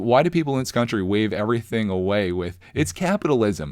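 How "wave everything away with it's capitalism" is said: ordinary talk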